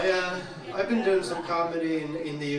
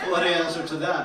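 ordinary talk, nothing marked

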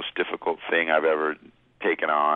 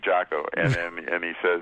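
plain

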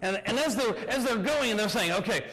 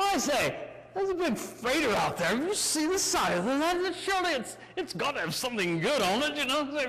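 fake British accent, pirate voice; 4 semitones higher than usual. A rookie pirate speaking: imitated British accent. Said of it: "rookie pirates (with stolen British accents)".

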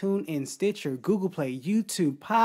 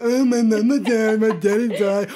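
loud, slow mocking with annoyance and disgust. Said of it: "you said it with such annoyance and disgust".

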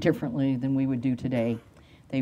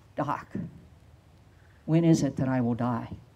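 put-on quavering, trembling voice; 2 semitones lower than usual. Retelling a frightened boy's question to the doctor: imitating a quavering voice. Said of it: "in a quavering voice".

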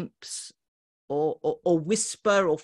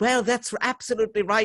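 agreeable, nice put-on middle-class voice; 4 semitones higher than usual. Describing meetings with very grand people, in a nice middle-class voice. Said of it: "do my sort of nice middle class voice".

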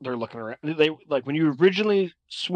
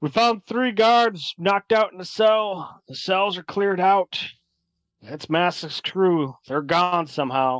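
far-off voice, pitched up; 6 semitones higher, 3 dB louder than usual. Narrating a scene, voicing someone calling from deeper in the cavern, distant voice. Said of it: "you hear a voice come from somewhere deeper in the cavern like".

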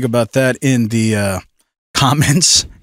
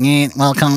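stiff, mock fifties space-movie alien voice. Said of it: "like a nineteen fifties ... Space Galactica movie".

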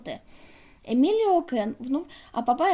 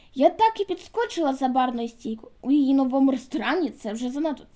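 plain reading voice

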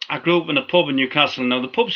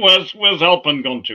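put-on Yorkshire accent. Retelling what someone at the gigs said when Kieran got lost, in John Strong's Yorkshire accent. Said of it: "in his great Yorkshire accent".

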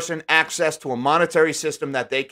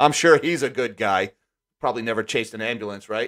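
low, openly mocking, sarcastic; 5 semitones lower than usual. Reviewing a bank's staff list, the speaker comments on its General Counsel, sarcastic. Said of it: "Note sarcasm".

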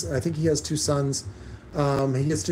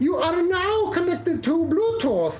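very high, put-on Chinese accent, announcement style. Speaker reviewing Bluetooth units mimics one's announcement, imitating its Chinese lady voice. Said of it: "it has like a Chinese lady's voice".

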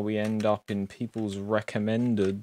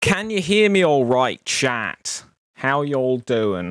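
goofy put-on voice, loud and silly; 4 semitones higher, 8 dB louder than usual. Greeting chat and checking they can hear, in a funny voice. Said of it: "I don't know why I'm doing a funny voice".

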